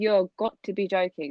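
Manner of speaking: ordinary delivery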